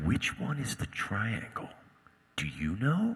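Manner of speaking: almost conspiratorial, slow, secret-sharing tone. Retelling an audition line, imitating own conspiratorial delivery. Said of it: "this almost conspiratorial thing".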